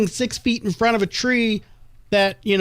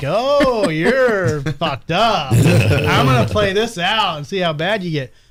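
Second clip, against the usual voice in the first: acted condescending, placating voice; 3 semitones lower, 3 dB louder than usual. Retelling how he talked to the speaker: imitating someone humoring a tripping person. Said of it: "talking to me like I'm on mushrooms".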